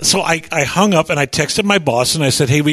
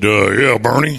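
put-on big, burly voice; 6 semitones lower than usual. Retelling a phone call from a man in his truck, in a big, burly voice. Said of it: "had a big, burly voice".

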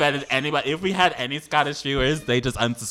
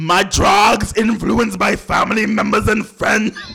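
loud, high, camp, butch put-on Scottish accent; 6 semitones higher, 7 dB louder than usual. Asked to do a Scottish voice, speaking in a Scottish accent. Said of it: "Do Scottish".

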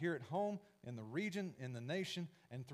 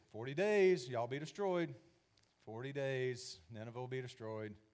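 mock, loud, half-hearted, going-through-the-motions delivery; 5 dB louder than usual. Acting out a reluctant man's repeated warning, mock half-hearted proclamation. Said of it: "he was probably doing this half-heartedly because he didn't really want to be there".

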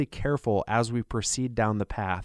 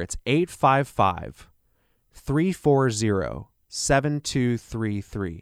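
unhurried, a little slower delivery. Repeating a phone number for the audience, a little slower. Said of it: "I'll say that a little slower".

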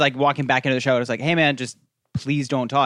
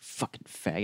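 put-on mutter under breath, much lower, quieter; 6 semitones lower, 14 dB quieter than usual. Retelling a man in the front row muttering to his friends, retelling a muttered slur. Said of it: "he just muttered to his friends like".

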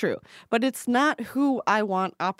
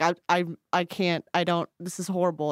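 ordinary talk, nothing marked

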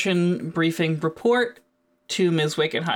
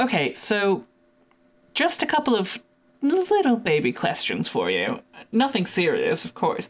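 openly sarcastic, faux-casual tone with swooping sing-song pitch; 2 semitones higher than usual. Questioning the team in character about their mission: sarcastic. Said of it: "That's me being sarcastic".

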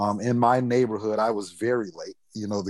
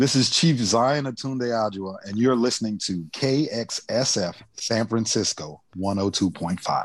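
on-air radio announcer, DJ station-ID delivery. Reading a station ID on air, in a radio announcer voice. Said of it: "How's my radio voice?".

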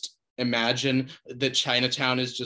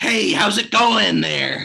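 very loud, rough voice, friendly but as scary as possible; 8 semitones higher, 9 dB louder than usual. Demonstrating a celebrity impression on a greeting: Jack Nicholson impression. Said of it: "My Jack Nicholson impression is, do the scariest like voice you can while trying to sound as friendly as you can".

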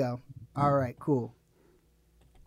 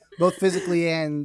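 normal talking voice

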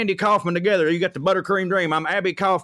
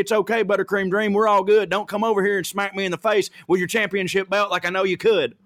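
put-on jovial voice. Retelling what a scared neighbor meant by his shout: imitating a jovial neighbor. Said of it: "he gave me a jovial woo to be like".

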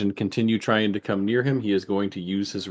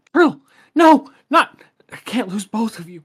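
very loud, very high-pitched shrieking screech; 13 semitones higher, 9 dB louder than usual. The game narrator voices her cry as she tries to run, screeching out. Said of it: "she screeches out".

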